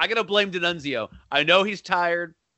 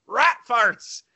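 high, put-on yell. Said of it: "and he yells".

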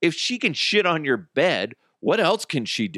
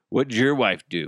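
plain

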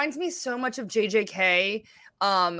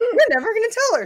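mock offhand, nonchalant delivery, higher and louder; 14 semitones higher, 7 dB louder than usual. Imitating a friend's remark, imitating a nonchalant tone. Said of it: "You're like".

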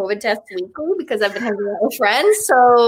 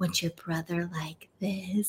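barely audible, very quiet whisper; 4 semitones lower, 14 dB quieter than usual. Retelling what a man whispered during a lap dance, retelling a whisper. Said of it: "and whispers".

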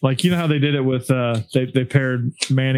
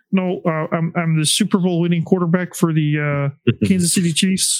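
put-on frog-puppet-like quarterback voice; 4 semitones higher than usual. Acting out a quarterback mistaken for Kermit the Frog, do a Patrick Mahomes impression, like Kermit the Frog. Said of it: "You're Kermit the Frog".

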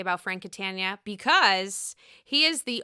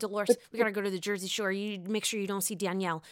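mimicked rapid fast talking; 4 dB quieter than usual. Describing a big guy who talks really fast; imitating a fast talker. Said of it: "a big guy that talks really fast".

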